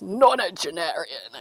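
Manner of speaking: really rough, gravelly, ground-out delivery. Quoting a line from a film in a really gravelly voice. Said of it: "Patrick Stewart goes in his really gravelly voice".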